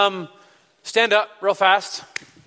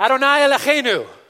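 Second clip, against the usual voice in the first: loud, high, passionate call-out. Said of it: "we're gonna say this loudly".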